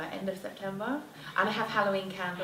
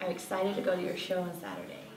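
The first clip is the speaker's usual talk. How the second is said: put-on American accent. Speaker repeats the other person's sentence, imitating that person's accent. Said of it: "Let me try and do your voice".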